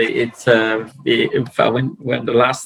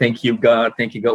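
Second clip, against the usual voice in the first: ordinary talk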